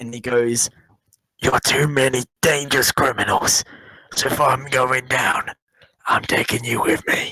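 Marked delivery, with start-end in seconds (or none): 1.4-7.3 rasping, raspy voice of a ship's captain. Game master voicing the captain to the players in a d and d game, raspy captain voice. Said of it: "you hear a raspy voice of the captain".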